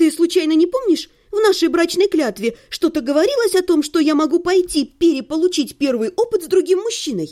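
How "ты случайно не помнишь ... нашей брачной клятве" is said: plain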